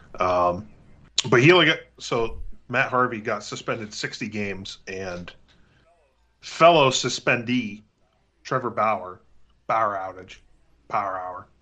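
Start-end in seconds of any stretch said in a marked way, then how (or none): 9.7-11.4 Pittsburgh pronunciation. Making a pun on a pitcher's name in a Pittsburgh accent. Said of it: "put in my Pittsburgh accent".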